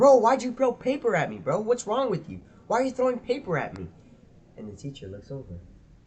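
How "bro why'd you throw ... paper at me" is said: acted shrill, high-pitched, loud yell. Recounting a fight over thrown paper, retelling own yelling. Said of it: "So I start yelling".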